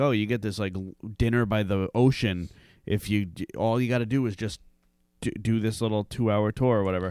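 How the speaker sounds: usual speaking voice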